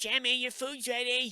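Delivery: mock very high call, projected across a distance. Voicing a woman in an old picture: imitating someone calling out. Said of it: "calling out".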